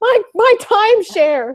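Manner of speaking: snide high-pitched woman's voice. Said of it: "she's just like".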